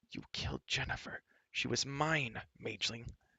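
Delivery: sultry, feminine voice twisted into a raging snarl. Narrator reading a vampire snarling at the first-person hero, sultry feminine snarl. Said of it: "The vampire snarled, and its voice was exactly the same, sultry and feminine, even though twisted by rage".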